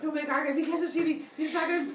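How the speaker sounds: high, mock nervous student voice.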